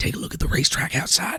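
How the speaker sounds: close whisper. A character skips after a departing man and leans in, whispering in his ear. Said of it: "leans in and whispers in his ear".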